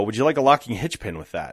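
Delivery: ordinary delivery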